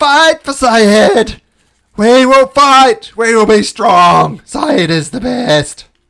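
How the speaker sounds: very high, very loud rallying war cry. In a role-play scene, followers cheer for Syed: loud rallying shout. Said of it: "They say quite loudly".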